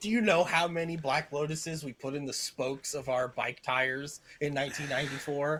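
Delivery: ordinary talk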